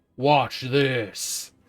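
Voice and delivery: a different loud voice cutting in. Narrating a scene where the listener hears a voice speak, deeper voice. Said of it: "you hear this deeper voice that says".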